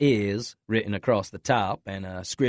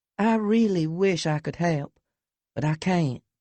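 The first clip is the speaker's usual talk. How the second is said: saccharine, honeyed, sugary sweet tone, pitched up; 8 semitones higher than usual. Reading a story, a character refusing to help: sugary sweet tone. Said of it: "Natalie's voice takes on a sugary, sweet tone".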